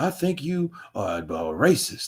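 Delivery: each word dragged out slowly. Insulting Larry Merchant in an impression, in a Muhammad Ali voice. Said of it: "Can you make a Muhammad Ali impression? Of course I can".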